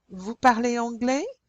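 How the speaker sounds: rising pitch lift on the end of anglais. French lesson on asking questions, rising pitch on anglais. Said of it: "Do you see how I go up at the end of the last word?".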